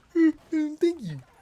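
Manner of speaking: very high, loud words spoken through a yawn. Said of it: "I yawned while I was saying that".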